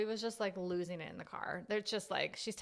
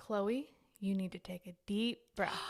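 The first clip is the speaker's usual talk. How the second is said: mock-calm, put-on calm voice. Retelling how a big sister spoke to her upset sister, imitating a calm voice. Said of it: "she turned to her and calmly says".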